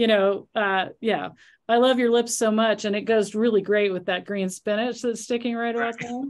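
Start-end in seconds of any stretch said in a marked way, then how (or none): none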